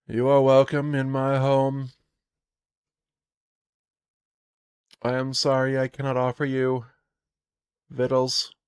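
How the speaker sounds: put-on flat monotone voice, sniffling. Narrator voices a woman who keeps sniffing and dabbing her nose, sniffly monotone. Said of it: "She sniffles and she has a monotone voice".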